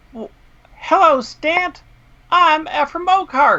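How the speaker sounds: tiny gnome voice, very high pitch. Voicing a little gnome in a hanging cage greeting the players: voicing a little gnome. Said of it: "see a little gnome who's whistling a song".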